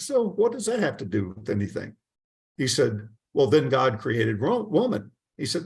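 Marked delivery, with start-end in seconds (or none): 0.0-2.0 separate, animated, slightly higher voice. Retelling a man who spoke in two voices, the second one higher. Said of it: "a little bit higher voice".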